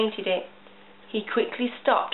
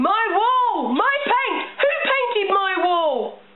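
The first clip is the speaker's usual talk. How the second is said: very high, loud, stretched-out yelling; 10 semitones higher, 5 dB louder than usual. Mr. miller sees a rainbow painted on his wall; shouting. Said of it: "and then he shouted".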